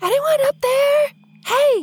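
very high-pitched whisper-shout. Calling up to the tower at the closed city gate, whisper-yelling. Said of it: "I'm going to whisper yell up to the tower".

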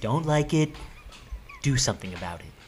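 put-on elderly politician voice. Doing an impression lecturing Greta to change things: Joe Biden impression. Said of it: "I normally don't have a good Biden impression".

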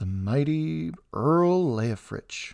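slow, drawn-out muttered delivery. During a tense, silent meal, she speaks up: muttered. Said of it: "she muttered".

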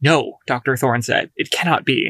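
plain reading voice

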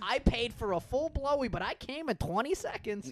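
high-pitched, put-on Boston accent. Joking about strip clubs, improvising a customer's line in an attempted Boston accent. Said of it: "i don't know what accent i just did. boston yeah".

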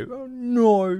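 high, dismayed Australian accent. Doing the no as a passing Australian: disappointed Australian speeding by. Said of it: "a disappointed Australian speeding by".

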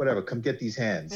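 mock scornful, sneering, taunting tone. Retelling a meme where Thanos answers Cap: imitating Thanos mocking. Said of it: "sort of mockingly saying".

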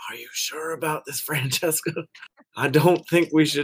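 quiet, hushed, softly spoken, kept down. Acting out a scene, speaking to francesca, quietly. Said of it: "I quietly say".

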